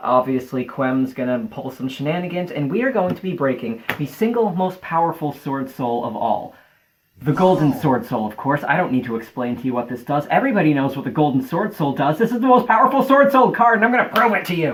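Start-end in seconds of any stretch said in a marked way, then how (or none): 8.6-14.7 breathless, rushed excitement, rising in pitch. Hyping up the card you're about to break, excited and running out of breath. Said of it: "sorry, I ran out of breath".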